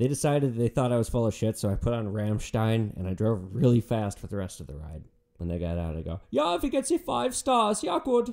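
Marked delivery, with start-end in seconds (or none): 6.3-8.3 silly, squeaky, very high put-on voice. Speaking to the college girls as they get out: put-on Hans character voice. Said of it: "no more voices".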